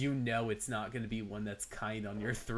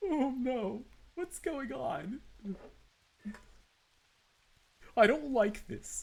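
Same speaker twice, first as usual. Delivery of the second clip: very high, timid, scaredy-cat voice; 13 semitones higher than usual. Speaker recalls the voice they gave a character they dislike, cowardly character voice. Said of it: "a really cowardly kind of like".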